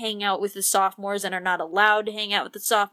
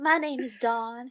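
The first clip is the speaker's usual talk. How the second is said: put-on Southern accent in a woman's voice; 3 semitones higher, 3 dB quieter than usual. Guessing how Dawn talks, the speaker plays Dawn in a southern accent. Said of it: "that wasn't bad".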